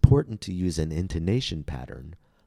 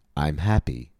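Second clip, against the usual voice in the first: happy as the focus word; 2 semitones lower than usual. Intonation lesson's simple example, marking the focus word: stress on happy. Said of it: "The focus word here is, of course, happy".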